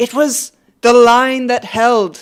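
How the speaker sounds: Irish-sounding voice. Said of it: "The accent is what the accent is".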